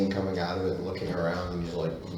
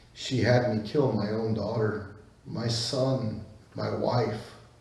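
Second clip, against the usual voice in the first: put-on sobbing character voice, higher pitch; 3 semitones higher than usual. Voicing a broken man who weeps over his dead family: crying character voice. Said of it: "he just starts crying like crazy".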